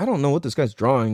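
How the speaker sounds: ordinary talk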